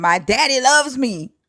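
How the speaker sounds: put-on high-pitched, childish screaming. Retelling how someone lost it and started screaming: imitating someone screaming. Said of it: "he started screaming".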